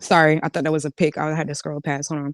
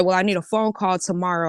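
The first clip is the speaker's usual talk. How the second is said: ordinary delivery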